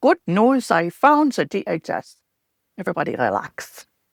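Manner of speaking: slow, fake German accent, clinical style. Playing a mock expert with a clipboard, in a put-on German accent. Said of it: "and a German accent and say".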